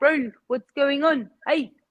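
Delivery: strong put-on New Zealand accent, casual. Imitating how pure New Zealanders talk: imitating a pure New Zealand accent. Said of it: "your pure New Zealanders will be like".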